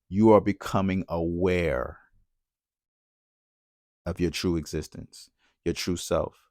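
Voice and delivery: very slow, quiet, drawn-out speech. Repeating a statement about spirituality to listeners, saying it real slow. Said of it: "say it real slow".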